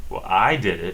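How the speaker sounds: heavy stress leaning on the word I. Explaining English emphasis with an example, with strong stress on I. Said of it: "you emphasize things with your voice".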